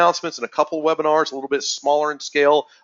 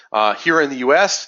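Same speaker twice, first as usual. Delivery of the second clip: ordinary talk, nothing marked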